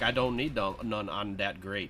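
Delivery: put-on, improvised Louisiana accent. Retelling what a man said when offered water, in a Louisiana accent. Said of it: "I'm doing my Louisiana accent".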